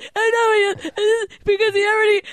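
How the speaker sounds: high, breathy, frantic fake sobbing.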